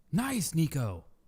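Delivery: loud radio-broadcast announcer voice. Saying a short greeting: sounds like a radio broadcast. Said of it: "Why you sound like you're on the broadcast?".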